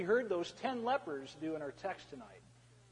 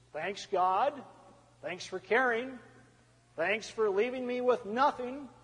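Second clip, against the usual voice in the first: sarcastic, mock grateful, jabbing tone; 3 semitones higher than usual. The speaker shows how a realist might thank God: sarcastic thanks. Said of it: "they might thank God sarcastically".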